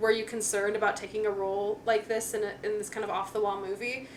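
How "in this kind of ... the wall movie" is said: normal talking voice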